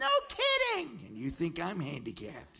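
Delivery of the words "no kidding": shrill, very loud, high Southern exclamation. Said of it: "sounded just like a Southern Edith Bunker".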